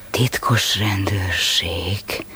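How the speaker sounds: very low, ugly, rumbling, hushed mutter. In a drama scene, a character's remark that the listener then questions, in an ugly grumbling voice. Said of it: "Miért mondod ilyen csúnya dörmögő hangon".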